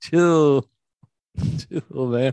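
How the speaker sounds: put-on surfer-dude voice. Acting out a man's reply about tickets that never arrived; imitating a surfer dude. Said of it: "surfer dude".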